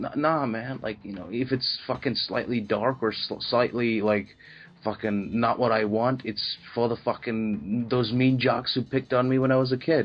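ordinary delivery

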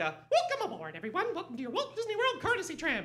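squeaky, high, swooping cartoon mouse voice. Retelling how he addressed tram riders at Disney, the speaker does his Mickey voice. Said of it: "I would use the voice".

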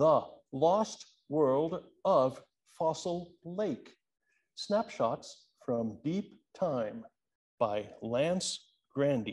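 game-show announcer, every syllable carefully enunciated. Reading out the title and author of someone's book: Jeopardy-style announcing. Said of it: "I'm going to do this in Jeopardy, Wheel of Fortune style, where you have to pronounce and enunciate".

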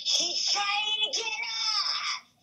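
very high shriek, stretched long. Telling how a lady who wouldn't move screamed in the speaker's face, retelling a scream. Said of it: "she screams in my face".

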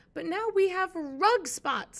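yelling out, high and loud. Narrating a story, the first-person narrator yells at the cat. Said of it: "I yelled".

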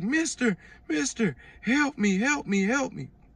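put-on high-pitched, desperate, childlike pleading voice. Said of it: "He was like".

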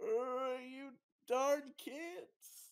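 put-on high cranky old-man voice, stretched-out you. Retelling how Mo reacts to being teased, imitating Mo as an old man. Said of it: "old man Mo with his fucking cane is like".

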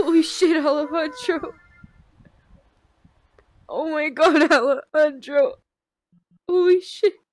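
tearful voice. Streamer reacting to a big donation at 7 a.m.: crying. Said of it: "why I'm crying at fucking 7 a.m".

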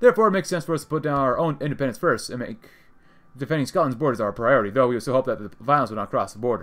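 ordinary delivery

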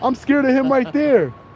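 tearful crying voice. Retelling how a woman accused the speaker: imitating someone crying. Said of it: "She's like".

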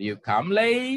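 question-like pitch rise on the word late. Teaching English question intonation: rising pitch on late. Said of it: "Jadi late-nya naik di ekornya, gitu naik".

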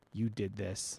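quiet, deadly, menacing without raising voice. Zara turns towards Skye and accuses her, quiet but deadly. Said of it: "She didn't raise her voice, but it was deadly all the same".

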